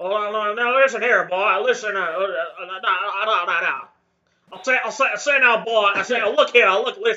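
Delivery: loud, blustery cartoon rooster voice. Riffing for the other speaker, Foghorn Leghorn voice. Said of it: "I'd love a Foghorn Leghorn salty fighting game stream".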